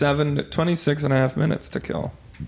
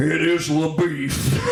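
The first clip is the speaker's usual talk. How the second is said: slow, weary, mumbling cowboy marshal voice. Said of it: "He goes".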